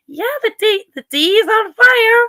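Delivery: squeaky woman's voice impression. Quoting a woman people mock on TikTok, imitating a squeaky voice. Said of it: "she's got a really squeaky voice".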